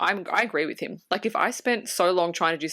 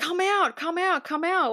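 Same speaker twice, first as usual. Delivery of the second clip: mock scream, higher pitch; 12 semitones higher than usual. Retelling a character calling everyone to come outside: imitating someone screaming. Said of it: "he's screaming at everyone".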